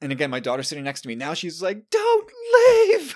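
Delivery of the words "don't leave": wailing, tearful begging, very high and loud. Retelling their daughter's reaction beside them, the speaker imitates her crying and pleading. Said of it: "she's crying".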